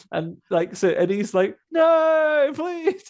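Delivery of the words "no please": very high, desperate pleading cry, "no" stretched. Retelling how a character begs not to be taken: imitating an upset plea. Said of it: "he's obviously incredibly upset".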